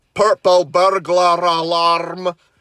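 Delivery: put-on slow, drawn-out Scottish accent. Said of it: "with the Scottish accent".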